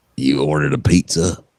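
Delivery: a woman's voice, rough and gravelly. Asked by others to show what she sounds like, imitating a gravelly-voiced woman. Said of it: "gravelly sort of voice".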